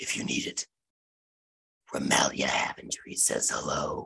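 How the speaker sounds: very quiet, barely voiced hushed whisper. Voicing a stranger who pulls a character behind a pillar: whispering NPC. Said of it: "he whispers".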